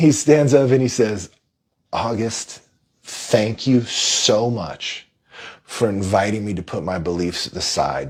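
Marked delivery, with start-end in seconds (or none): 1.9-8.1 voice choking up with feeling. Recounting a man's thank-you to August, choking up. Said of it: "I'm choking up just talking about it".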